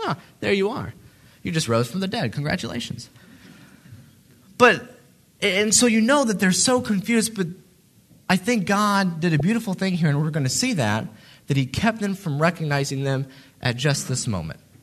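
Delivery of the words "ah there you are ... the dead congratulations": mock offhand, unbothered, casual and nonchalant. Picturing meeting the risen Jesus on the road: mock nonchalant greeting. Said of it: "kinda nonchalantly".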